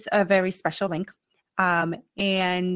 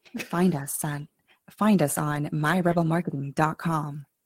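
much lower, sexy, seductive announcer voice; 4 semitones lower than usual. Giving out the company website, trying a sexy announcer voice. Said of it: "I need to work on like a sexy announcer voice".

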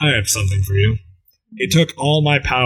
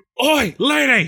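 put-on English-accented cat voice, much higher pitch; 12 semitones higher than usual. Speaker imagines her cat calling out to her, English-accented cat voice. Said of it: "I can imagine with like an English accent".

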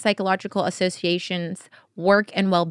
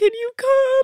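crying, pitched very high and tearful. Retelling a friend's phone call, imitating someone crying. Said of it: "She was just crying".

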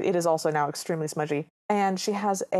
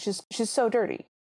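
ordinary talk, nothing marked

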